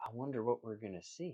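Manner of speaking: hushed, soft half-whisper. Voicing a figure who embraces the player from behind: half-whispering. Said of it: "she's kinda whispering".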